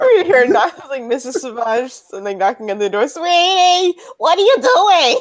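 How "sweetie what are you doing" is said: put-on Jersey accent, much higher, louder, slower. Acting out a mom knocking on the door, in a put-on New Jersey accent. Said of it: "I don't know why your mom's from New Jersey".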